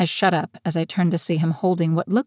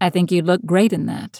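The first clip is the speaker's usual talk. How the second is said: dry, expressionless deadpan delivery. Reading a story aloud, the narrator answers Coop's teasing question: deadpan. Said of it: "I deadpanned".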